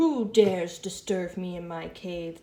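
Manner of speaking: loud, slow, growling storybook dragon voice. A teacher reading a story aloud to the class voices the dragon: growling dragon voice. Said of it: "The dragon growled".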